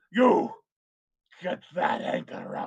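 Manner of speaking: slow, hollering ship captain voice. Voicing a sea captain giving orders to the crew: yelling sea captain. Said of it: "he's yelling".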